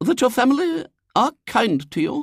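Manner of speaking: hesitant, unsure, very high-pitched delivery. Reading a story aloud, voicing the lady's question: uncertain. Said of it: "said the lady uncertainly".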